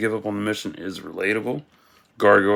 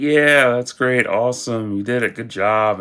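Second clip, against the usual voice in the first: mock sarcastic, falsely approving tone; 3 semitones higher, 3 dB louder than usual. Retelling a sitcom trailer where the wife praises him: imitating sarcastic praise.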